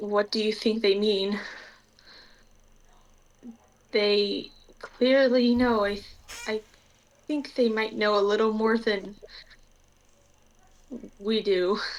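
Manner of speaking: quiet whisper under breath. Voicing a character who pulls another aside near the door: whispering under her breath. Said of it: "she's probably just gonna whisper".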